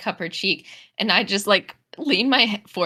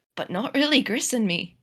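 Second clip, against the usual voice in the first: lowered, private, confiding voice; 3 semitones higher than usual. Voicing a character confiding to a companion: lowered voice. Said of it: "I lower my voice to her".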